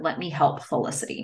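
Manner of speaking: plain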